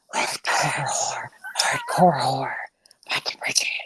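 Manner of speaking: soft unvoiced whisper.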